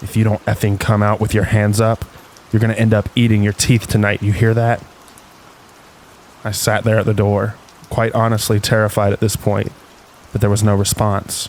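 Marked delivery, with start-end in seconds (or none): 0.0-4.8 acted tough, intimidating, menacing tone. Retelling what they said through a door opened a crack, retelling an intimidating threat. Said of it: "sounding as intimidating as possible".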